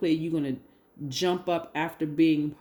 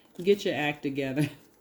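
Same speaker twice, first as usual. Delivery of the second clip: ordinary talk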